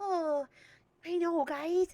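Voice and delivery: really high-pitched little dog voice. Speaker demonstrates the voice they give their dog, Simon's high-pitched dog voice. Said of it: "Simon's voice is like really high pitched".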